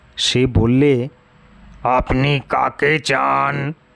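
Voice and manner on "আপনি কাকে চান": hollow, creaky voice echoing as if inside a pot. Reading a story where a frail old man asks a question: voice as if from inside a pot. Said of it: "ঠিক যেন হাঁড়ির ভিতর থেকে তার গলার আওয়াজ বেরুলো".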